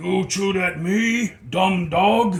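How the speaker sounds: very loud, high, hollered ogre voice yell. Narrating a scene, voicing an ogre accusing the knoll, in a yelling ogre voice. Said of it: "The ogre yells".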